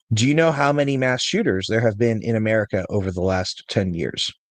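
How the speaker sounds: usual speaking voice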